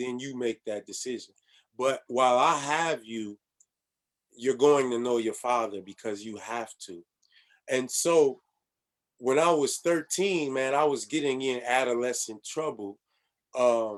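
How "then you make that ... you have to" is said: usual speaking voice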